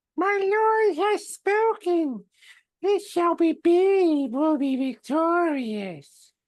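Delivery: slow, drawn-out put-on voice. Speaking as a character announcing the lord has spoken: Elmo voice. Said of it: "when I do the Elmo voice".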